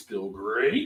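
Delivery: breakfast cereal mascot voice. Reading out a friend's beer rating in a Tony the Tiger voice. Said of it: "in his Tony the Tiger voice".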